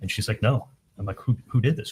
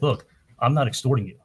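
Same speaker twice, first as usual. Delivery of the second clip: put-on cross, angry, defensive tone; 2 semitones higher than usual. Retelling the reply to an extortion accusation, imitating someone angry. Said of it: "she got angry".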